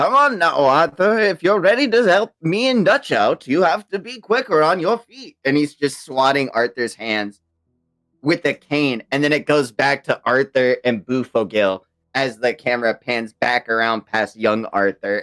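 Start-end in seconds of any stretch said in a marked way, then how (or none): 0.0-5.4 put-on refined old man voice, much higher. Retelling a game scene, the speaker voices an old man swatting young Arthur, old refined man voice. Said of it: "he's just like this old refined man being like".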